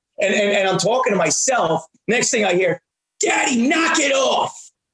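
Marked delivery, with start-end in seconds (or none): 3.2-4.7 mock little girl yell, very high and drawn out. A dad recalls his little daughter in the car; imitating a child yelling. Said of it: "she's yelling at me".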